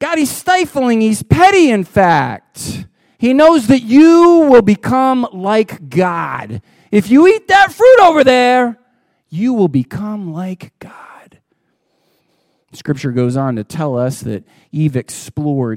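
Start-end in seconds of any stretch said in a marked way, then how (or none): 0.0-10.9 put-on light touch of Jersey accent with swooping pitch. Voicing Satan telling Eve about the fruit: Satan with a Jersey accent. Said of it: "Satan has a little bit of a Jersey accent".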